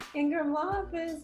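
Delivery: super high-pitched phone voice. Imitating how she answered the law office phone: super high phone voice. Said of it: "like super high".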